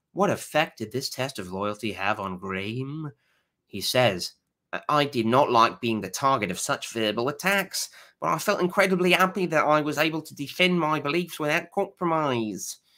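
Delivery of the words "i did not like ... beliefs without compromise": put-on unconvincing, failed Australian accent. Reading out a man's quoted answer, in a failed Australian accent. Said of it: "That didn't sound Australian".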